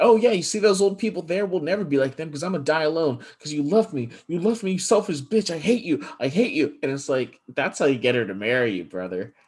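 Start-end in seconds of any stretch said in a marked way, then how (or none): 0.0-6.8 put-on, shrill, accusing, ranting yell. Retelling a film scene where he yells at her while ice skating: imitating someone yelling. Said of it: "he's yelling at her as they're ice skating".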